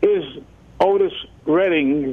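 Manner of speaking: very slow, drawn-out, each word deliberate. Introducing a track that wasn't queued up, said very slowly. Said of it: "I'm going to say this very slowly".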